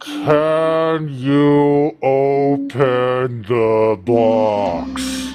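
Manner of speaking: overly slow delivery. Asked to repeat a question slower, the speaker says it very slow. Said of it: "That was too slow".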